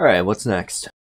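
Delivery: put-on deep, low devil voice. Playing the devil in an acted conversation, in a deep devil voice. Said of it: "the devil's voice has been getting consistently one step deeper".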